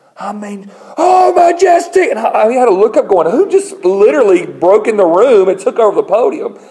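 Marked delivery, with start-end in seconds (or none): 1.0-2.1 very high, sudden, bursting-out shout. Retelling a man at the podium who suddenly starts yelling, retelling a yell. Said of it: "He starts yelling".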